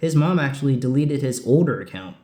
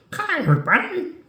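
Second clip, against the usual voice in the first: very high, duck-like cartoon voice; 12 semitones higher than usual. Imitating how a cartoon duck talks in a newer show: Donald Duck voice. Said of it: "That's my attempt at it".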